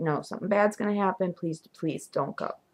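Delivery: soft, earnest, urgent pleading. Recalling begging John not to go out one night, retelling her own pleading. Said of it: "I just begged him not to go".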